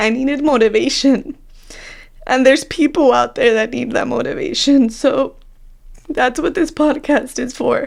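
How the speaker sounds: choking up, tearful, on the verge of crying. On a podcast, speaker recalls a hard time, choking up. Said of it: "sorry, I'm gonna cry".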